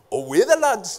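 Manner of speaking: put-on Newcastle Geordie accent. Retelling what a man said beside his car: imitating a Geordie accent. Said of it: "he said it in a Geordie accent".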